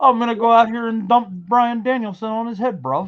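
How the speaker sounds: talking through a mouthful of marbles. Imitate a man who has marbles all in his mouth, in a marbles-in-the-mouth voice. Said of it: "He's got marbles all in his mouth".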